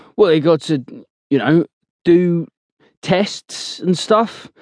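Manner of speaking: halting, unsure, faltering delivery. Blowers answers Cookie's challenging question, faltering. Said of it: "Blowers answers with a faltering tone".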